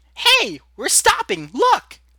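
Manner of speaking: very high, very loud, shrill sugary sweet voice. Reading fiction aloud, a new character's voice cuts in: high-pitched sweet voice. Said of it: "a high pitched, sweetie voice pierces the air".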